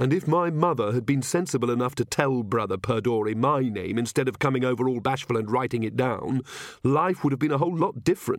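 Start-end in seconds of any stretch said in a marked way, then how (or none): none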